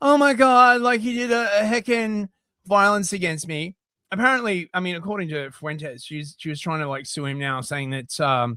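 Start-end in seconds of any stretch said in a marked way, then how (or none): 0.0-3.7 sneering, derisive mock voice. Retelling how someone filming from a car talks: imitating someone filming from a car. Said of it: "so that they can be like".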